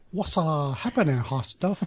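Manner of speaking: mock Chinese accent. Co-hosts joke about saying a line in an accent; offensive fake Chinese accent. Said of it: "please do a Chinese accent".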